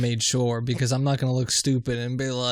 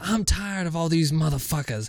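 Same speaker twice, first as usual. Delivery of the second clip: man acting out full, out-of-control fury; 4 semitones higher than usual. Retelling how a man on the bus flipped out: imitating a furious outburst. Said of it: "the homeless guy flips the fuck out".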